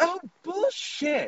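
very high, put-on nerd voice. Retelling a nerd's reaction to a stupid movie, in a very nerdy voice. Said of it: "in a very, like, nerdy voice goes".

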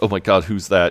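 plain

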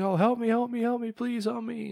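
put-on very high, desperate, pleading scream. Retelling a show where a girl is dragged onstage, imitating her screaming plea. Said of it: "she's like screaming".

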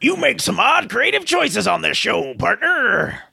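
put-on rough, creaky, old-timey prospector voice. On a show, an imaginary listener character addresses the host: old-timey prospector voice. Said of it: "He happens to sound like an old-timey prospector".

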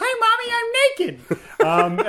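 put-on very high, very slow, sing-song small-child voice. Retelling a story, quoting a small boy calling from the shore in a tiny little voice. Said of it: "we just hear this tiny little voice go".

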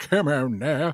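cartoon character kid voice. Describing a misheard lyric that recalled South Park: South Park voice. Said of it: "South Park".

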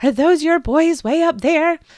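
high, frightened, alarmed, terrified voice. Retelling a worried mother at the park asking about his boys, imitating a terrified mother. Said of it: "asks in a terrified voice".

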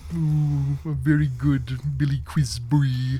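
very specific slow, high cartoon character voice. Talking about Venture Brothers, the speaker does a Venture Brothers character impression. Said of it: "He's got a very specific voice. He's like".

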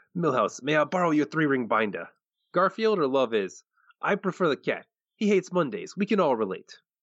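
cartoon mob boss character voice. Sharing Casey's favorite line from an episode, done as a Fat Tony impression. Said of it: "That's my last Fat Tony impression".

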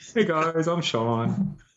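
very high, very slow, drawn-out voice. Opening the show with an impression of Sean. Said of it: "Sean sounds exactly like that".

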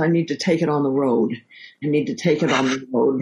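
put-on muttering under the breath. Retelling how a co-star mutters on set: imitating Lily Tomlin muttering under her breath. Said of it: "she'll kind of mutter under her breath".

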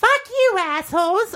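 tiny, very high-pitched puppet voice. Asked for something to say as Elmo, the speaker performs it in Elmo voice. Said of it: "I need something to say as Elmo".

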